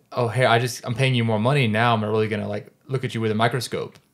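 normal talking voice

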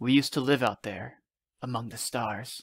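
in a whisper. A father answers his child's question about why he flies, whispered. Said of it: "he whispered".

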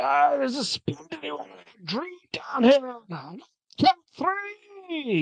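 put-on shouting in dwarf accent. Game master voices a dwarf shouting through the cavern, yelling in dwarven accent. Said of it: "yell in his dwarven accent".

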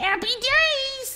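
very high squeak, "days" stretched out. Doing a line someone requested, in a squeaky voice. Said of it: "they've asked me to say happy days in a squeaky voice".

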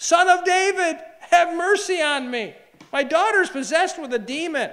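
woman crying out, very high-pitched and very loud. Retelling a Bible story, voicing a woman who starts yelling to Jesus. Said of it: "she starts yelling".

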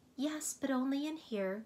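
mild, soft tone. A voice in the parlor answers her visitor's question: replied softly. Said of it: "she replied softly".

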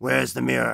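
thick, heavy voice. Narrating to the players, voicing an unseen captor, in a thick voice. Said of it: "you hear a thick voice saying".

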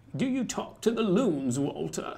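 low, deep, film-star style voice. Among the others doing voices, the speaker slips into a Katharine Hepburn impression. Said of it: "that was her. She's at on Golden Pond talking to the loons".

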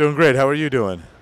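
sultry, seductive, sexy voice. A voice actor greeted by the podcast host answers in his sexy voice. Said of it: "he's using his sexy voice".

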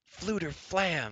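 high, joyful, delighted shout of surprise. A man greets a long-absent companion who bursts through the door: shouted with joyful surprise. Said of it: "Taryn shouted with joyful surprise".

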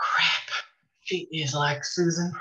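quiet aside to oneself. After Kayla points to Greg's wheelchair, a character reacts, said to herself. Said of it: "(to herself)".

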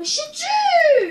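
high-pitched, loud, defensive shout.

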